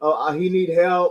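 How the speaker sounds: play-acted mild scream at talking volume. Retelling what podcasters at the stadium say: imitating podcasters screaming. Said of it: "they screaming".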